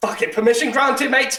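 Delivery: gruff, high, loud captain shout.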